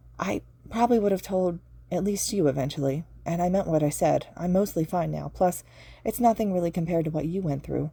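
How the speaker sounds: ordinary delivery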